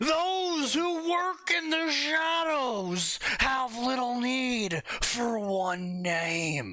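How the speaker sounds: put-on old wizard voice. Reading a line aloud; old wizard voice. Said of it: "you sound like an old wizard".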